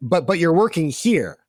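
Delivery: ordinary delivery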